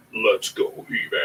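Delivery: very deep, breathy voice, pitched as low as possible. Picturing the actor who voiced Shredder playing Battle Cat, deep Battle Cat voice. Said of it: "I can't even get my voice that low".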